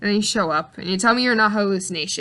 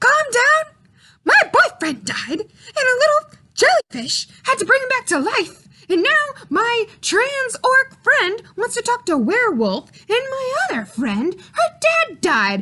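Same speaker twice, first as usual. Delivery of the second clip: very high, tearful, crying, worked-up agitated outburst; 3 dB louder than usual. Ranting in character to another character about a crisis: agitated, worked-up rant. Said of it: "sir, you need to calm down".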